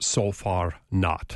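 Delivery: put-on Austrian accent, low pitch. Recalling an Egyptologist's answer to a question, quoting him in an Austrian accent. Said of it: "he said in his Austrian voice".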